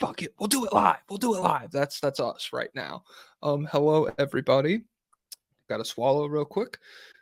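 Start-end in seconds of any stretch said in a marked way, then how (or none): 0.0-1.7 pitched-up, hard, screaming rant. Retelling how Bill O'Reilly screams at his staff: imitating Bill O'Reilly screaming. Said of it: "screams at his, uh, hi-, I don't know, his staff".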